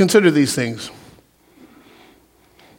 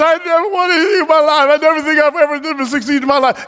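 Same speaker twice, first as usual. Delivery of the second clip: high-pitched, whiny, mopey, mock depressed complaining voice. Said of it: "you sitting there all depressed".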